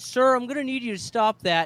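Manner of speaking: high, overly polite tone. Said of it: "He's just so fucking nice".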